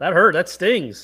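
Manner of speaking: derisive, mocking tone. Reacting to a teasing remark from another speaker: derisive tone. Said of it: "I can hear the derision in the voice".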